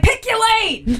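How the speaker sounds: put-on high, yelled Boston accent. Retelling yelling at other drivers in the car: imitating own yelling in Boston accent. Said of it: "I'm good about yelling in the car, and that's when, like, a Boston accent comes out".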